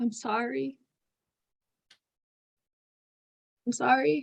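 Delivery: whispering in character. Playing a drunken character who begins to whisper an apology: whispering in character. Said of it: "I just kinda start to whisper".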